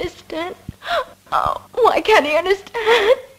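wailing through very loud sobs, high crying wail. A girl, upset about her father, speaks to Miss Dent, crying. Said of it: "Don't cry so".

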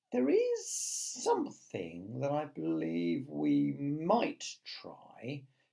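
unhurried, slow, deliberate, drawn-out words. Reading a story aloud, voicing James Henry Trotter answering the others: slowly. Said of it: "James Henry Trotter says slowly".

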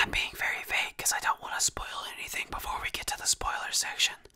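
speaking in a whisper. Describing a game's hidden places while avoiding spoilers, whispering. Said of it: "how much I'm doing this weird whispering in this video".

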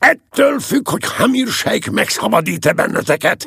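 very high-pitched, loud shout. The captain calls out during a dispute over a briefcase, shouting. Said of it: "kiáltotta a kapitány".

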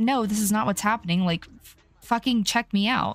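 ordinary talk

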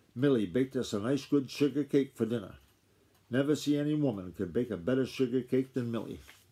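ordinary delivery, nothing marked

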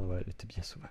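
soft, unvoiced whisper of regret.

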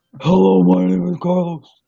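voice dropped very deep and low. After a daughter's impersonation of her dad: Carlos impression, very deep. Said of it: "my Carlos voice. I can't get low enough".

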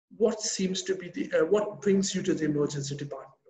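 plain

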